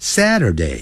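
falling tune, falling pitch on Saturday. English lesson on days of the week, Saturday falling from high to low. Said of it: "由高往低这样念".

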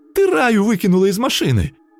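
very high, thin, tearful little voice, whiny squeak. From the front seat, the terrified witch accuses her companion, in a thin whiny squeak. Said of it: "пропищала она тонким плаксивым голоском".

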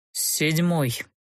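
gloomier, grim muttering through gritted teeth. Narrator reads the count answering the duke's question, muttered through teeth, gloomier. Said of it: "Еще мрачнее процедил тот".

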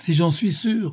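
noisy, put-on gaiety, forced and too loud, pitched high. Answering his companion's gloomy question, a man exclaims with forced, overly loud gaiety. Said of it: "s'écria Sholmes, avec une gaieté un peu trop bruyante".

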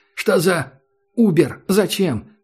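full, high, drawn-out yell. Reading a young woman's cry to a companion: shouted. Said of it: "закричала Герда".

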